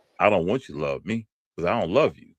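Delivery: acted, sarcastic, scornful tone. Retelling what she threw at him after his confession: imitating a sarcastic tone. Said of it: "it was in a sarcastic tone".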